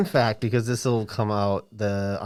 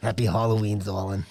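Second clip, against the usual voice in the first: put-on smoky character voice; 2 semitones lower than usual. Asked for the Betsy voice, the speaker tries it: slick smoker's Betsy voice. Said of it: "Can you do your Betsy voice? ... slick smokers one".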